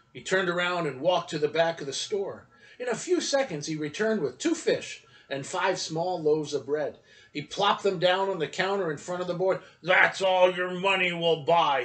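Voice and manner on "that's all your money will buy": hard, harsh, raised voice. The man at the store counter answers a boy, harsh. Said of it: "he said harshly".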